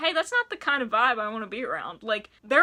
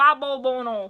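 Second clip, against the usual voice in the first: put-on Georgetown accent; 4 dB louder than usual. Reading a sentence aloud from memory, the speaker says it in a Georgetown accent. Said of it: "I tried to say that in my Georgetown voice".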